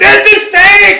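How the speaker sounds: very high, shrill, loud yell. Retelling screaming at a wrestler from the crowd: imitating himself screaming as a kid. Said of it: "I'm just screaming at this dude".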